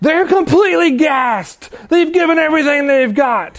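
acted-out hoarse commentator yelling, very high-pitched. Quoting an excited commentator whose voice is shot, imitating hoarse yelling. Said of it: "hoarsely yelling, like his voice is shot".

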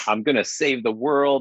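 plain

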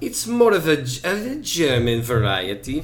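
put-on Italian accent. Describing the beer Vinnie to the other speaker: put-on Italian accent. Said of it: "You sound Italian".

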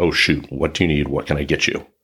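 plain

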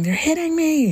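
mock shrill, very high screaming cry. Retelling how she refused to join at the bounce house, retelling her screaming. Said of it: "she's screaming and saying".

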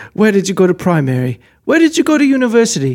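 British accent, faked for effect. Speaker imitates how people in France talk, to a co-speaker: mock British accent. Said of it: "You're doing British though".

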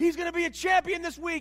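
high, loud cheering yell. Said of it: "he'd be yelling your name".

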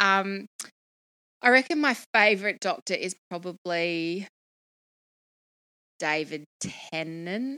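hesitant, unsure, tentative, noncommittal voice. Naming a favourite Doctor while liking all of them, hesitant. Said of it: "I say it very hesitantly".

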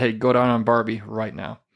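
whispered voice. Retelling whispering in someone's ear in a club: retelling a whisper. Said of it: "I whispered, I said".

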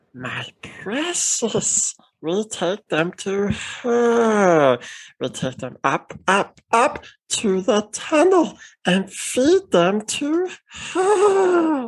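very high swooping creature voice, "her" stretched out. Speaker shows off their one talent for friends: Gollum voice. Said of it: "I can do the Golem voice pretty well".

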